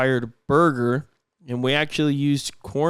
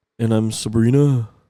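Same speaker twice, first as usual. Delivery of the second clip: put-on loud, flat monotone with zero enthusiasm; 3 semitones lower, 5 dB louder than usual. Mocking how the listener sounds, imitating their unenthusiastic delivery. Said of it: "you know what you sound?".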